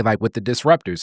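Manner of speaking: ordinary talk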